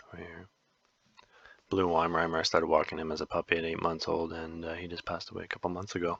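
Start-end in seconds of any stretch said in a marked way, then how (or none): 4.7-6.2 hushed, soft half-whisper. Recording on mic for the first time, half-whispering. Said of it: "I whispered there".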